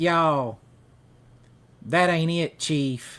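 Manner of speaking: overdone Southern accent, laid on thick. Mocking how Hollywood actors overdo it: overdone Southern accent. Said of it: "they all wanna overdo it like this".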